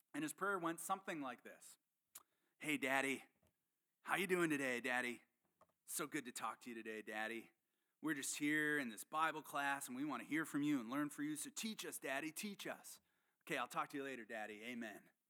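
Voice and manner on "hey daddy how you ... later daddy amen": put-on California surfer-dude accent throughout. Retelling a surfer's prayer in bible class, speaker does his voice: surfer accent. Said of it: "He had this incredible surfer accent".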